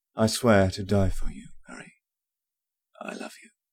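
hoarse voice. A young man speaks to his friend face to face, in a hoarse voice. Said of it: "Ron's voice was hoarse".

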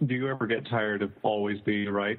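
ordinary delivery

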